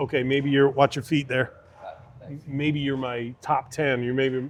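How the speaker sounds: ordinary delivery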